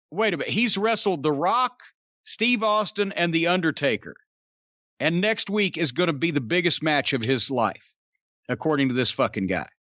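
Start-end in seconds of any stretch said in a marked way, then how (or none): none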